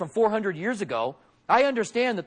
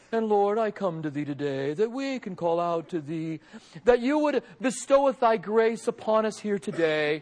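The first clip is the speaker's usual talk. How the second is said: showy put-on pious praying voice. Showing how one might pray to seem spiritual: put-on spiritual praying tone. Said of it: "I may use a certain tone in my voice".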